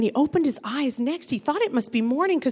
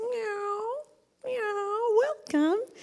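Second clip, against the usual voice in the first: sweetest, tiny, high, soft little kitten voice; 9 semitones higher, 6 dB quieter than usual. Reading a story aloud, the cat welcomes a little donkey: sweetest little kitty voice. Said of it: "in his sweetest little kitty voice".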